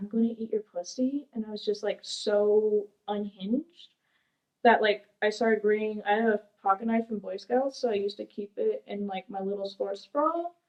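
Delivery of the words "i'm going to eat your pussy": soft half-whisper under the breath, no voice. Recounting a man coming up to her on the way to the shop: retelling a half-whisper. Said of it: "he whispered".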